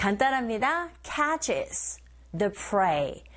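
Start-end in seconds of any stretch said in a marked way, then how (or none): 1.0-3.1 extremely slow, careful, deliberate reading. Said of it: "second listening point".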